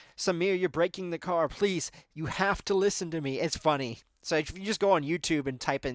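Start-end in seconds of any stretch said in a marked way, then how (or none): 0.2-3.4 mock, begging, pleading tone. Retelling a spotter begging a driver to listen: imitating someone begging. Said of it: "begging him to stop at the end".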